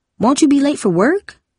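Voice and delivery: anxious, fretful, high, worried voice. Reading a story, Darcy comes home from school and asks her mother, worried voice. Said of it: "Darcy asked in a worried voice".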